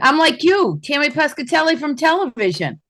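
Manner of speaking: shrill, very high, loud shouting. Headlining comedian introducing herself to the crowd, shouting. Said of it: "Why are you shouting like that?".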